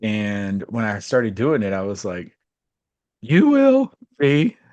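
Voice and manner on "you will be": put-on cracking voice, higher and louder. Retelling reading aloud in front of people, imitating a crackling voice. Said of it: "my voice was crackling".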